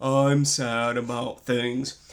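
low, slow, dragged-out deep drone. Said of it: "Eeyore has a deep voice and he's always like".

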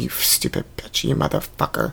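acted mutter under the breath. Describing a constant habit of talking under the breath: acting out muttering under breath. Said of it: "Talking Under My Breath Anonymous. Because I'm constantly going".

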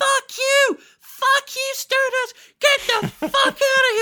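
hate-filled scream, very high and very loud. Retelling how a woman at a wrestling show screamed: imitating a woman screaming. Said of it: "was screaming".

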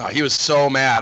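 plain

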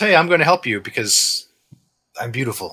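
theatrical, flamboyant, showy show-off voice. Describing a game character who randomly shows up to help: flamboyant archer voice. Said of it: "this like very flamboyant archer".

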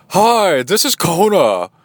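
silly put-on voice, high, slow, very drawn out. Retelling a phone call where Kona speaks, in Kona's fake voice. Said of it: "we do this fake voice for Kona that's pretty funny".

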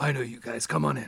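put-on rough, creaky, raspy old doorman voice. Voicing Dalton, the bouncer at the door, greeting the group: voicing Dalton the bouncer. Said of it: "he's like".

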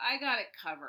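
put-on condescending tone. Retelling what a woman replied to the speaker: imitating a condescending tone. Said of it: "she said it to me in such a condescending way".

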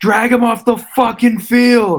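put-on shrill, very high, drawn-out furious scream. Speaker retells a Pittsburgh fan behind them, imitating a fan screaming. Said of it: "getting up and screaming like".

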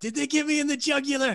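very high-pitched mock panic, mocking tone.

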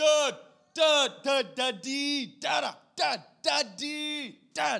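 put-on very high baby babbling, slow and drawn out. Retelling a toddler calling out at five in the morning: imitating a babbling toddler. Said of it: "I would wake up at five A M to".

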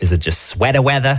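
put-on comedic, sketch-style Brooklyn local accent. Speaker talking with another speaker, quoting an old Saturday Night Live skit in a Brooklyn accent. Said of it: "Why'd you say it like somebody from Brooklyn?".

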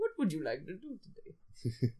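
swooping comic-book movie-villain voice. Speaker voices an imagined AI assistant, Bane voice. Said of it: "Now it's gone into Bane".

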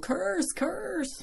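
very high-pitched mock yelling.

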